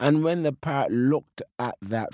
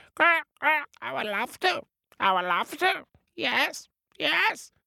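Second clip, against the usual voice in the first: very high, squawky parrot-like bird cry voice. Narrator telling a story, the parrot answers the cat: squawking parrot voice. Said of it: "the parrot squawks".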